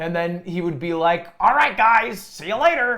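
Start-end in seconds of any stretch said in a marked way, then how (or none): 1.4-3.0 high-pitched, loud calling out. Imagining Mister Beast giving away money and leaving: Mister Beast impression. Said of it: "Is that how he talks?".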